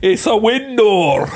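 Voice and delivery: put-on Scottish accent. Replying to another speaker during a back-and-forth, in a Scottish accent. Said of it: "Why'd you go with that accent?".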